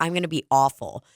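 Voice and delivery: ordinary talk, nothing marked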